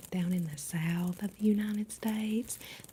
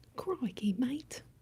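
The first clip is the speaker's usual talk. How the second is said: put-on Australian accent, pitched up; 5 semitones higher than usual. Showing off an aussie accent said to sound a bit british: put-on australian accent. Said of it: "so you're saying that my Aussie accent is a little bit British?".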